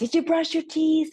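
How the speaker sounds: high-pitched, loud yelling, carrying far.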